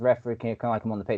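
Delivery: ordinary delivery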